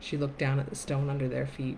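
plain reading voice

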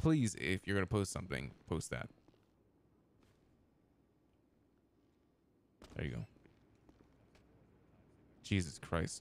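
flustered, rattled voice. Correcting earlier wording and asking others what to post, flustered. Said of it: "Sorry, I'm just fucking flustered".

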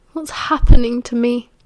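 ordinary delivery

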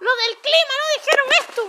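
yelling in a panic.

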